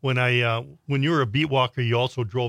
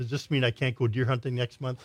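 normal talking voice

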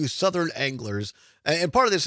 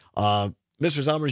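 ordinary talk

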